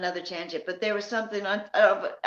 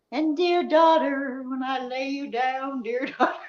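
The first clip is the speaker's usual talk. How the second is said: put-on preacher voice, higher and slower; 5 semitones higher than usual. Talking with another speaker about Kylie's mom, imitating Lindsay's preacher talk. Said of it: "preacher talk is exactly what I thought of".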